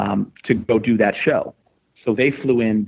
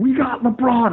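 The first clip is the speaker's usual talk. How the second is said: very high-pitched screaming; 13 semitones higher than usual. Retelling a phone call to a wife about LeBron: retelling screaming into a phone. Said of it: "literally screaming in the phone".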